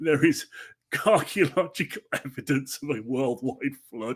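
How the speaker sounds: words broken up by laughing throughout. Speaker reading a quoted claim aloud, laughing while speaking. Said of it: "I can't say it without laughing".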